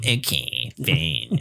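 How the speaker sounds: very low-pitched, put-on Danish accent. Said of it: "And [name] was just sitting there like".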